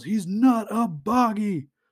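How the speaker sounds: very slow, high, drawn-out called-out yell. Retelling a comic scene where someone yells a correction: imitating someone yelling. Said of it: "someone yells".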